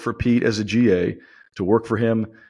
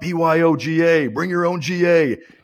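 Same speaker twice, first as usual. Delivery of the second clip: yelled at a much higher pitch, slower pace; 7 semitones higher than usual. Describing the receivers coach yelling when a sheet isn't stapled right, imitating Robert Prince yelling. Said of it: "he yells out".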